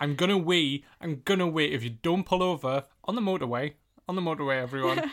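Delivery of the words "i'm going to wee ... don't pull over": acted-out drunken, desperate screaming. Retelling the sister screaming to pull over on the motorway: imitating someone screaming. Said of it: "her screaming at me".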